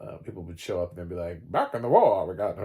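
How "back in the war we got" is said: put-on old newsreel announcer voice, louder. Recalling newsreels shown before films: old newsreel announcer voice. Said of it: "you always hear that voice".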